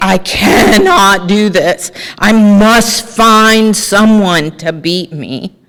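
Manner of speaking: crying, slow, tearful, desperate pleading. Retelling calls to a sponsor: imitating own past crying. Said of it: "I would be crying".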